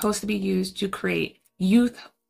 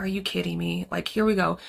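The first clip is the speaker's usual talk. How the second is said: put-on mild, unbothered annoyance; 3 semitones lower, 4 dB quieter than usual. Retelling a pastor walking in on a scene of bodies: imitating mild irritation. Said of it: "it's like a slight irritants to him".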